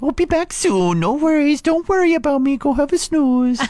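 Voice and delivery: very high doggy voice. Reading listeners' Facebook responses aloud, in the dog voice. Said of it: "I'm reading every single one of these over on our Facebook page in the dog voice".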